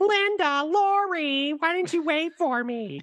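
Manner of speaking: high, slow, drawn-out voice with deliberate pauses. Redoing an impression praised by a podcast guest: Annie from Halloween impression. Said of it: "he said I nailed Annie".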